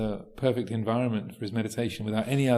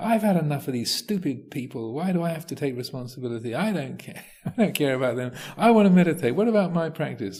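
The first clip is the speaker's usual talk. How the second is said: put-on griping whine; 4 semitones higher than usual. Acting out the inner voice a man described hearing; imitating a whining inner voice. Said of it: "this sort of whining, complaining um, voice".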